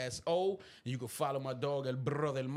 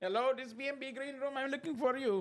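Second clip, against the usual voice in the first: put-on Indian accent, pitched very high; 11 semitones higher than usual. Retelling how he answered a call, the speaker imitates him in an indian voice. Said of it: "Why we did the Indian voice?".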